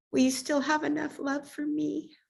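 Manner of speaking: put-on soft, high-pitched small little girl voice. Retelling what the daughter asked the speaker: little girl voice. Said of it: "in her little girl voice".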